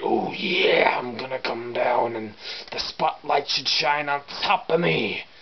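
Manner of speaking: bad, intense, over-the-top promo announcer voice. Contrasting two wrestlers' talking styles: bad Macho Man impression. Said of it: "Whereas Macho was like, ... Terrible impressions, I know".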